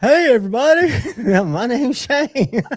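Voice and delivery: very high pitched, slow, drawn-out delivery. Retelling how someone came in and greeted everybody: imitating Shane. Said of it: "was like".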